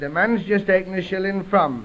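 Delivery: plain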